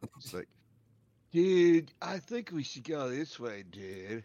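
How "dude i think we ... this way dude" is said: put-on old stoner wizard voice. Joking about how the stoner wizard would talk: imitating a stoner wizard. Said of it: "More like the stoner grandpa".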